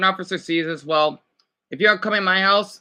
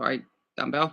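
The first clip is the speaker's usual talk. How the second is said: plain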